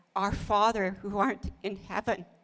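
ordinary talk, nothing marked

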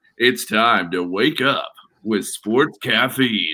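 slow, drawn-out commercial announcer voice. Showing the others the voice from the Sports Caffeine ad: Sports Caffeine ad voice. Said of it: "you got the voice of the, the sports caffeine".

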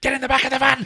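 over-the-top shrill screaming at very high pitch. Retelling a film scene where a police officer orders someone into the van: imitating a screaming cop. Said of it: "this really screamy line".

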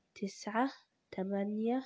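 calm, soft, slow, unhurried counting. Showing how to count down to calm yourself: slow, gentle counting. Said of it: "كده بالراحة".

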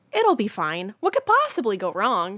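very loud, big sing-song voice with wild swooping pitch. Saying last words at the end of the episode, Kaz impression. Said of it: "That's my Kaz impression".

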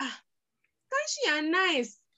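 high, surprised voice.

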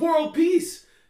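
shrill, high, loud, full-blast yell. Retelling a stranger in a public place: imitating someone yelling out. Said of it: "someone just yelled out".

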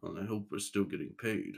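very quiet, soft mutter under the breath. Prior gives a nod and starts following Leon, muttering under his breath. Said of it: "he kind of mutters under his breath like".

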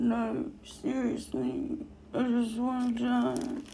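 mock whispered groan. Retelling what a woman said while she was hurting: retelling a groan. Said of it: "She groaned".

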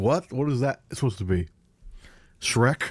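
puzzled, baffled tone of voice. Doing an impression of a podcast colleague for the other speaker: imitating Andrew Lima. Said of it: "I'll do the impression for him".

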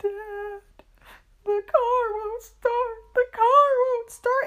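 fake sobbing, very shrill, loud, very high wailing. Retelling a father mocking his child at dinner, mock fake crying. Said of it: "would start fake crying".

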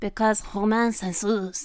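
speaking with a French accent. Repeating a phrase on request for a co-host: french accent. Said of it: "I love your, like, French voice".

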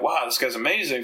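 plain

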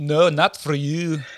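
put-on, imitated Irish accent. Retelling what a guy said when asked, in an Irish accent. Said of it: "that's perfect Irish accent".

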